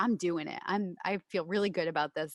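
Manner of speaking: normal talking voice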